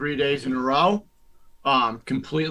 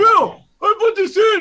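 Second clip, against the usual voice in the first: very high, drawn-out sobbing, crying whine; 8 dB louder than usual. Retelling how the other speaker complained yesterday: imitating someone crying. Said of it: "you were crying".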